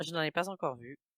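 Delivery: rapidly spoken French, said fast. Showing how a French phrase sounds in quick speech: said fast. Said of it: "And if I say it fast".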